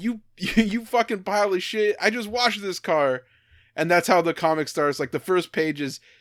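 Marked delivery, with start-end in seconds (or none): 0.0-3.2 put-on, pitched-up, petty, sputtering indignant outrage. Retelling a comic where a driver yells at bikers: imitating a man screaming. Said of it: "he screams at them".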